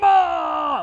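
screaming very loud and high-pitched.

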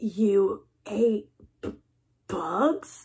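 stuttering. Reading a bat reacting to a strange young bat's story: stuttering. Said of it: "stuttered one".

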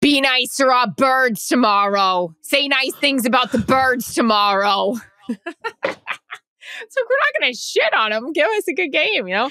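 put-on New Jersey accent. Asked for one last Jersey accent on the way out, a Jersey accent. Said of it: "Give us your last Jersey accent".

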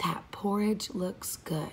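very quiet whisper. Speaker practicing a level-one whisper voice with listeners, whispering as Goldie Clucks. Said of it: "whisper to yourself".

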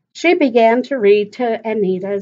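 ordinary delivery, nothing marked

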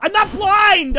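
shrill, very loud, high-pitched yelling outburst. Streamer thanking a viewer while playing a game, then yelling. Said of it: "And if I'm yelling, it's all out of love".

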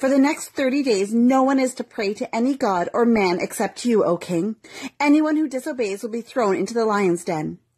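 ordinary delivery

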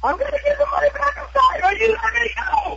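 shrill, very high scream-sob, screaming through crying. Retelling a scene where a man cuts off your finger; retelling screaming and crying. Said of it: "And then I'm screaming again".

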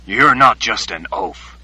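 dripping with contempt, scornful tone. Crooked Teeth speaking to Oba before silent onlookers, quiet and contemptuous. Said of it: "said in a quiet voice, filled with contempt".

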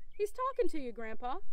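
ordinary delivery

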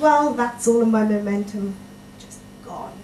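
ordinary delivery

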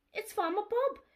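gasping. Dolly dashes to the stable and announces farmer bob; gasped. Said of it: "she gasped".

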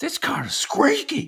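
put-on shrill, very high, drawn-out yelling. Retelling a woman with a squeaky cart, retelling her yelling into the phone. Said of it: "She's just yelling it into the phone".

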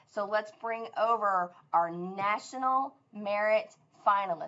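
very slow, deliberate, stretched-out words. School presenter on the news introducing the National Merit Finalists, saying it really slowly. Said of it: "I'm saying it really slow".

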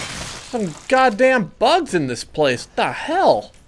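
high, jumpy, freaked-out outburst. Talking to viewers while fighting off bugs in a game; freaking out. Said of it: "I'm freaking out".

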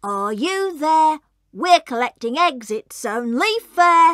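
ordinary delivery, nothing marked

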